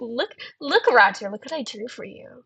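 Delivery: proud, boastful show-off voice, proud as can be. Showing art of Glisten drawing Roger, mock-proud Glisten voice. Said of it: "He's so proud of it too".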